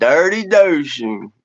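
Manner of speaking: Texas accent, laid on. Told to try a phrase in a Texas accent, a speaker repeats it: Texas accent. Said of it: "We got to get like a Texas accent on that too".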